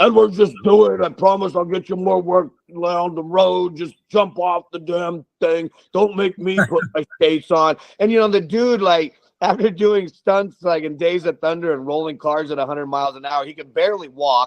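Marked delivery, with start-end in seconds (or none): 0.0-7.8 insistent, pushy half-shout, mild yell. Retelling how the second unit director yelled before a jump: imitating Boyum yelling. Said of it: "just yelled at me".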